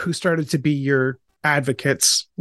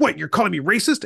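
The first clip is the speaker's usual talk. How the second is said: put-on defensive tone, raised pitch; 4 semitones higher than usual. Retelling a man's reaction in a discussion about race, mimicking a defensive reply.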